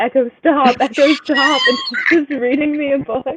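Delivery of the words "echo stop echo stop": loud, drawn-out, acted-out screaming. Retelling telling the device to stop reading: imitating own screaming.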